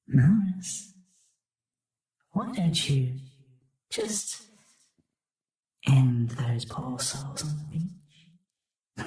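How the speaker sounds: very little, tiny, small inner voice. Speaker recounting a little voice heard inside, acting it out in a very little voice. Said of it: "a very little voice".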